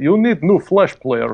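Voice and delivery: thick, fake, put-on Russian accent. Describing a scam website, imitate someone speaking in a russian accent. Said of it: "in a Russian accent".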